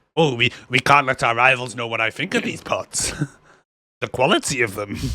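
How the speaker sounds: character voice dropped low. Voicing a character inspecting pottery, slipping into a Yoda voice. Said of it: "I don't know why I sound like Yoda".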